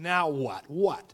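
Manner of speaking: irritated, fed-up, annoyed and exasperated tone. Retelling a joke where a man turns back: imitating an annoyed man. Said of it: "he's, like, annoyed now".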